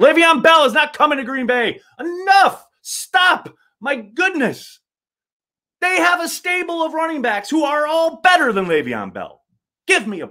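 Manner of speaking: heated, worked-up outburst, pitched very high. Host insisting a released running back is not coming to Green Bay: worked up. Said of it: "I get a little worked up sometimes".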